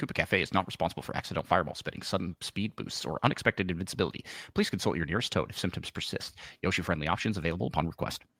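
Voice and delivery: rapid, hushed, whispered rattle like legal small print. Reading out a made-up coffee ad's fine print, in a fast disclaimer voice. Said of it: "fast in a fast disclaimer voice".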